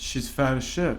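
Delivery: ordinary talk, nothing marked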